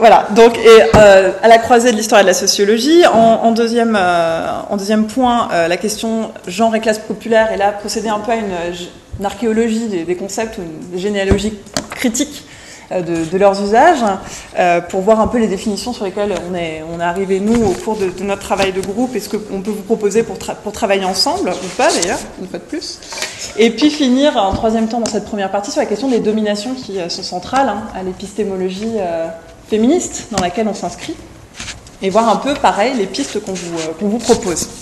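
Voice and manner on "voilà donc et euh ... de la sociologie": louder, projected lecture-style voice. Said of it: "J'essaye de parler fort pour Cathy".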